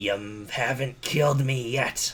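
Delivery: bared, snarling delivery. In a tabletop game, a grappled guard snarls at his attacker: snarling. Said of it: "snarls at him".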